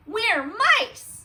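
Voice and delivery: very high, loud, squeaky mouse voices. Reading a story aloud, the narrator voices the mice answering the big cheese: squeaking mice. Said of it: "They squeaked".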